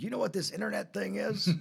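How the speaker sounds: put-on high-pitched Texas accent. Retelling what the company president asked him in Dallas, in a Texas accent. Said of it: "he said to me in his Texas accent".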